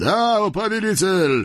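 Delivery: high-pitched shouting from a distance. Voices from the far bank answer the sultan's call; shouted back. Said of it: "прокричали в ответ с того берега".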